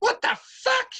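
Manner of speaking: tiny, high, piping, squeaky creature voice. Describing a red creature heard in a fountain, high-pitched squeaky voice. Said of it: "you hear in a high pitched squeaky voice".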